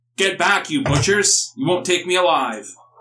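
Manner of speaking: hostile man yelling, high and shouted. Voicing an archer who ambushes the party: man yelling out. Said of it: "a man yells out and says".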